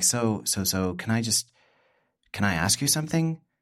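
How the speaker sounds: mock-nervous, slow delivery. Recounting someone breaking a long silence to ask a question, imitating nervous asking. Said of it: "just sort of nervously".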